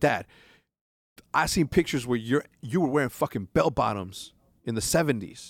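usual speaking voice

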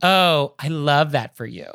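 slow, patronizing, condescending tone. Giving an example of a phrase that sounds patronizing: condescending tone. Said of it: "the tone with which you say that, of course, is condescending".

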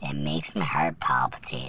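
soft, tender, intimate whisper.

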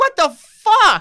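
very high, shrill, very loud screaming outburst. Retelling the director's reaction to a stunt double's wrong suit, imitating Todd Phillips losing it. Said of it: "loses his fucking mind".

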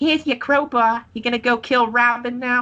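squeaky, very high, cartoonish voice. Retelling a wrestling match, imitating Daphne's cartoon voice. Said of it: "she talks like a cartoon character".

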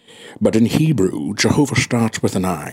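very low, deep, bottomed-out voice. Quoting a film line in a best impression: Sean Connery impression. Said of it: "I'm doing Sean Connery from all walks of life".

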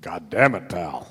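raspy voice kept soft. Answering a question about Vince sounding raspy: raspy Vince McMahon voice. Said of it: "Just a little raspy there".

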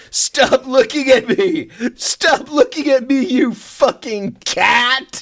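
mock furious outburst, very high and drawn-out. Retelling a movie scene where a character yells at a cat: imitating an angry yell. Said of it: "He's really angry".

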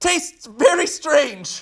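very high-pitched, squeaky noise. Retelling taking a bite of the potato: imitating own high-pitched voice. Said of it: "I made a high-pitched noise and said".

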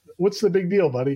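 normal talking voice

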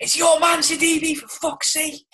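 mock, very high, shrill, loud yell. Retelling a fan shouting at a defender during a match: imitating a fan shouting. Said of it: "some fella just shouts".

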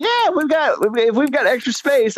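high slow drawl. Quoting a man with a huge house who has room to spare: Steve Spurrier-style high Southern drawl. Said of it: "high pitched Southern drawl".

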